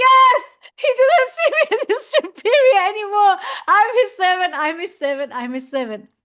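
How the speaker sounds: mock blissed-out rapture, very high-pitched gushing. Retelling a devotee's words while being beaten: acting out ecstatic joy. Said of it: "he's in ecstasy".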